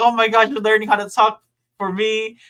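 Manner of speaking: high, excited gushing. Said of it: "he gets all excited".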